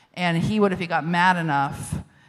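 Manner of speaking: ordinary talk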